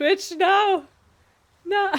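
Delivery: high-pitched, screaming, protesting tone. Begging Twitch not to ban the channel: screaming. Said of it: "while I'm screaming".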